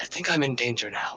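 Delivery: muttering under the breath. Voicing Phalar speaking to the shadow: speaking under his breath. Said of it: "under his breath".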